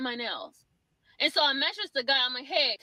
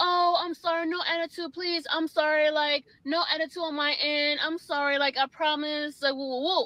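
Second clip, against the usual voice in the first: put-on calm, composed voice. Retelling keeping cool with the one fixing nails: imitating own calm apology. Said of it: "kept it, my cool".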